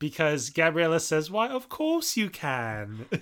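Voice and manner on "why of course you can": high, swooping fake British accent, "can" stretched out. Recapping a movie scene, speaker quotes Gabriella in Gabriella's fake British accent. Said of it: "in her like fake British accent".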